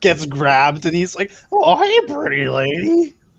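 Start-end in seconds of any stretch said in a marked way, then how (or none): 1.5-3.1 put-on drunk cartoon voice, higher pitch. Voicing a nearly drunk character who gets grabbed: Barney from The Simpsons voice. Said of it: "think this guy's like Barney from The Simpsons".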